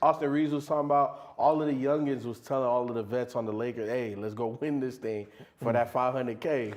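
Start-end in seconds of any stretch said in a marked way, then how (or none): none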